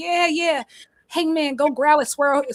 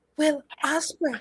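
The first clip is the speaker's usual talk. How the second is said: put-on whisper, quieter; 2 semitones higher, 4 dB quieter than usual. Retelling what he said as the crowd went wild: imitating a whisper. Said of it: "He whispered".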